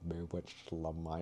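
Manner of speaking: very soft, quiet, hushed character voice. Recalling a line once played as Severus Snape: Severus Snape voice. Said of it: "I did a voice for him".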